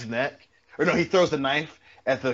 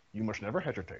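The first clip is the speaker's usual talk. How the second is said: put-on very quiet, low murmured Scottish accent; 4 semitones lower, 12 dB quieter than usual. Quoting a favourite line from Lionheart in a Sean Connery Scottish accent. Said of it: "I try to do my Sean Connery voice".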